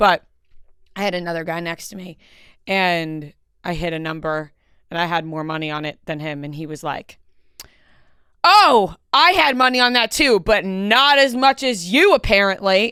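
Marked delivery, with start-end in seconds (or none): 8.4-12.9 put-on loud, hollered screaming. Retelling a man at the table who had less money on the winning number, imitating someone screaming. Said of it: "And he's like screaming".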